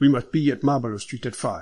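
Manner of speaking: plain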